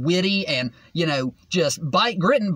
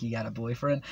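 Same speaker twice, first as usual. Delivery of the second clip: put-on deep, soft, hushed flirty murmur; 8 semitones lower, 10 dB quieter than usual. Describing a man on the phone, imitating his flirty voice. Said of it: "he first starts out in like this flirty voice".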